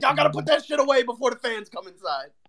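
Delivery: very high-pitched, mad, angry scolding tone. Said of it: "He was so angry".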